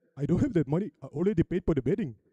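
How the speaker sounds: put-on Indian accent, spoken fast. Retelling his own reply to his future mother-in-law, indian accent. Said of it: "Don't know why I was speaking in Indian accent".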